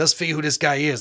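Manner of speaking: put-on New York detective accent. Acting out investigators finding a car: put-on new york detective accent. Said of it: "that's our detective accent".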